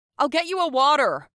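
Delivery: very loud, very high shouting. Narrator reads a man's reply as he walks away, shouting back. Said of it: "He shouted back".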